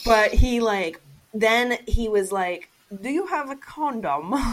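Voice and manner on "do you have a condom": bashful, embarrassed put-on English accent. Retelling a man asking her for a condom, in a fake British accent. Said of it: "he couldn't say it in an English voice".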